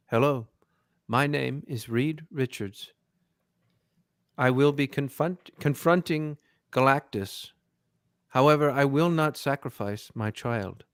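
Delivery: flat robotic machine voice like a computer. Imitating an actor playing Reed Richards: flat robotic HAL 9000 voice. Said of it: "doing his impression of HAL nine thousand. ... This this is him".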